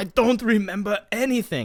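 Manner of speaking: high, far-off, mock dazed voice. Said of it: "He's like".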